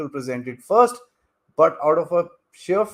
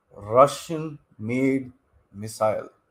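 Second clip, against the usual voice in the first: each word read out very slowly and deliberately; 3 semitones lower than usual. Speaker reads the end of a news line aloud to viewers, very, very slow. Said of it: "I'm going to read it very, very slowly".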